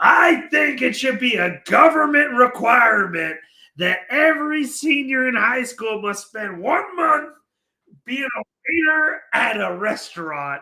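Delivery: play-acted scream, high-pitched and drawn-out. Retelling what a drunk stranger at a bar screamed out: imitating a man screaming. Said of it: "this guy screams out".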